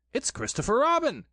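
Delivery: eager, keen, very high-pitched exclamation. Reading a story aloud, voicing Pooh: eager. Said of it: "said Pooh eagerly".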